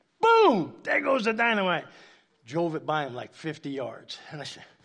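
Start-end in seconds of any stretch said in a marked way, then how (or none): 0.2-1.8 put-on loud, swooping, boastful, triumphant yell. Retelling his drive off the tenth-hole tee box, retelling a yell. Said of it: "he would yell out".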